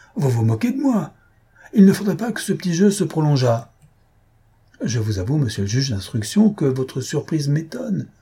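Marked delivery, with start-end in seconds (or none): 0.2-3.7 high-pitched, exclaimed outburst. A narrator reads a character's reply in a novel, exclaiming. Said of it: "s'exclama Monsieur Fiel".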